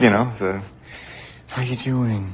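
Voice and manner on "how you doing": pitying voice, all sympathy. Speaker tells someone they never use it, then mimics it: mock pity voice. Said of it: "You never do the pity voice with me".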